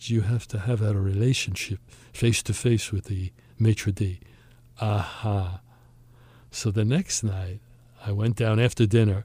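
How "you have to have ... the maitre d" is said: put-on French accent. Quoting a waiter's reply about getting a certain table, in his french accent. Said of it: "in his French accent".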